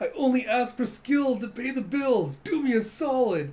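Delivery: high, loud begging tone.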